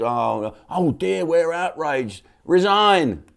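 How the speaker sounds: scornful, very slow, high, drawn-out fake outrage. Mocking critics who demand a resignation: mocking outraged voice. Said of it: "They're outraged".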